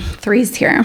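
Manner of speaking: disdainful, disapproving, sneering distasteful tone. Quoting how someone would say it: mock-distasteful tone. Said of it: "saying it with distasteful tone".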